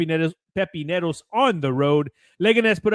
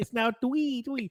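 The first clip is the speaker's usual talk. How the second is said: put-on soft, high, cutesy baby talk, three said as twee; 5 semitones higher, 9 dB quieter than usual. A new dad giving a football score after being asked about it, cutesy baby talk. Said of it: "baby talk".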